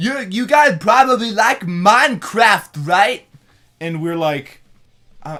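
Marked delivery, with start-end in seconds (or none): 0.0-3.2 very loud, high-pitched, kiddish fan voice. Retelling what a kid fan said, imitating his voice. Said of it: "this is exactly how this guy sounded".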